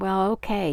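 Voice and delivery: ordinary delivery, nothing marked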